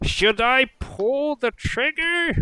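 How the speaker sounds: shrill, very high goblin shout. Voicing a goblin in a fight: goblin yelling. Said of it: "some goblin yelling".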